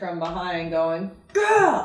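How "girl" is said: high, loud male yell. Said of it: "some man yelling at her from behind going".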